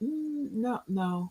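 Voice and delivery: hushed, very soft, gentle, kind, sweet. Showing how to say no without attitude, saying no nicely. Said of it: "it's saying no nicely".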